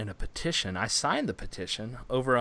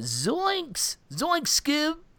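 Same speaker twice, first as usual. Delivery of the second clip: very high cartoon voice with pitch swooping around. Joking about a petition for Shaggy from Scooby-Doo: Shaggy from Scooby-Doo voice. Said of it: "which was for Shaggy from Scooby-Doo".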